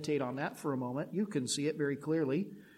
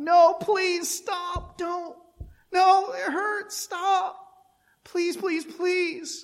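mock very high, drawn-out pleading cries of pain; 9 dB louder than usual. A mother acts out Peyton crying out during a painful routine, imitating Peyton begging. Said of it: "he would just beg like that".

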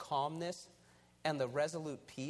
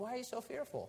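put-on meek, almost curious, gentle tone, pitched up; 7 semitones higher, 4 dB quieter than usual. Retelling what he said to someone fearful, acting almost inquisitive. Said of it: "almost inquisitively".

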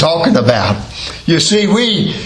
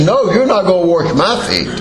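plain

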